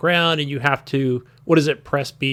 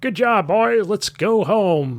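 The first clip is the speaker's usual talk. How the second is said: slow, pitched-up put-on American accent; 6 semitones higher than usual. Imitating the game's American base commander: American commander voice. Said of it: "the base commander, he's definitely American".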